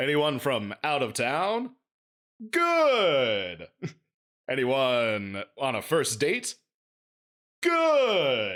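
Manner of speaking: mechanical robot voice, swooping pitch, good drawn out. Describing an early-2000s robot comedian's act, in robot comedian voice. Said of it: "that fucking robot comedian".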